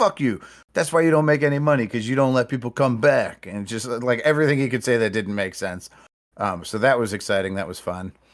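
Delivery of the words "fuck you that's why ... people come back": mock, high, screamed rant. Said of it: "screaming racial obscenities and everything else".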